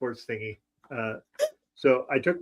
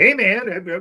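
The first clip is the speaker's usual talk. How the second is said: pitched-up, salesy car salesman voice; 7 semitones higher, 6 dB louder than usual. Describing how Justin greeted people in the street, imitating Justin. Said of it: "like just one very car salesman".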